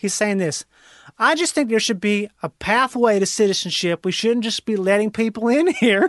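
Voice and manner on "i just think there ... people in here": put-on Louisiana accent. Quoting an interviewed man who grew up in Louisiana: imitating a Louisiana accent. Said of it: "who talks like this".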